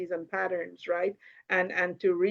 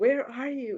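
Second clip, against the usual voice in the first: sweet, beautiful, lovely calling voice; 6 semitones higher than usual. Quoting a YouTube video someone sent the speaker, imitating a beautiful voice. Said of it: "in the most beautiful voice".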